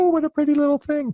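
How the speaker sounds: very high voice. Retelling what she'd have said had the baby been a girl, imitating her even higher voice. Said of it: "her voice would have gone even higher".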